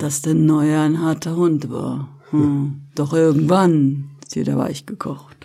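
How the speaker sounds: mock masculine voice. Asked to make the voice sound male, says the line in a put-on male voice. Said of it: "lass mal deine Stimme männlich klingen".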